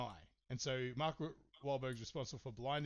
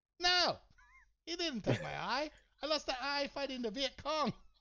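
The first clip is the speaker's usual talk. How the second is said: deliberately bad Vietnamese accent, very high-pitched; 13 semitones higher, 7 dB louder than usual. Retelling a story, quoting an old Vietnamese man's reply, in a terrible Vietnamese accent. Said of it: "If you'll excuse my terrible accent".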